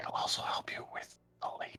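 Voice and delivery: hushed, quiet whisper. Getting close to another character and speaking into his ear, whispering. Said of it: "I whisper in his ear".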